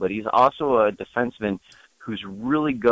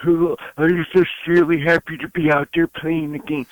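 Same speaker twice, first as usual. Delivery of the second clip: put-on gummy, toothless old codger voice, pitched up; 7 semitones higher, 3 dB louder than usual. Retelling a player's post-game interview, imitating an old codger voice. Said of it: "he's talking like some old codger".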